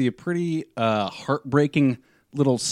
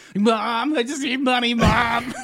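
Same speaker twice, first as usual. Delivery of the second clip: very high, very slow, drawn-out wailing; 11 semitones higher than usual. Mocking a movie where Leo DiCaprio begs for money: imitating Leo DiCaprio wailing. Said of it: "Leo DiCaprio, like, like, wailing for money from people".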